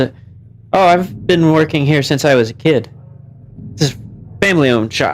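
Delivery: ordinary delivery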